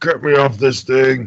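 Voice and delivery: loud dwarf growl. Narrating the scene, voicing the dwarf on the hook, a growling dwarf. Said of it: "He'll growl".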